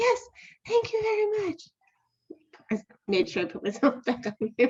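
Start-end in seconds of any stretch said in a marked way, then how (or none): 0.0-1.6 very high, airy, breathy put-on voice. Retelling thanking the person who answered her question in a coaching practice; high breathy voice. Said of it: "I changed my voice to this high, breathy voice".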